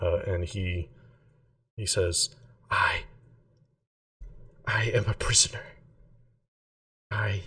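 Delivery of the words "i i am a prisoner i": frightened, scared. Voicing a prisoner questioned directly by a player: frightened. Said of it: "much more frightened".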